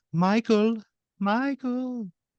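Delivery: put-on high female voice with German accent. Retelling a woman's voice heard calling a man's name, soft German-like accent. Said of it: "soft woman's voice in like a curious accent, almost like a like a German accent".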